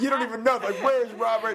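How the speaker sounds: teasing while laughing, high, loud.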